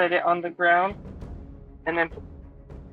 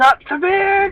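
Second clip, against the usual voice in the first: quick shout; 13 semitones higher, 7 dB louder than usual. Voicing a character calling out while flying: quick shout. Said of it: "You just hear a quick shout of".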